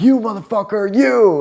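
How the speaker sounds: put-on very high, furious, enraged shout. Retelling yelling at a scared man from across a store: imitating own angry yelling.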